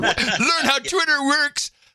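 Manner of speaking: very high, slow, laughing mock troll voice, taunting. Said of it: "And then the guy comes back".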